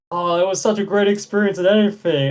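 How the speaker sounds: put-on happy voice. Retelling the dad's return to the hotel after his birthday, imitating a happy dad. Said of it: "he left so happy".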